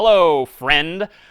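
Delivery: sarcastic tone. Demonstrating a greeting for a Python coding example, sarcastic. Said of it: "maybe I'm being a little sarcastic here".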